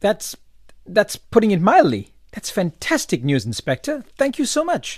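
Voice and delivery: thrilled, overjoyed, high, swooping, excited voice. Thanking the Inspector for news of the reward money, overjoyed. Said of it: "You sound like you're getting the money".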